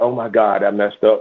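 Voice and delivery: put-on nervous mumble, muttered under the breath. Retelling how a nervous homeowner reacted: imitating someone muttering under his breath. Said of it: "I could hear him talking under his breath".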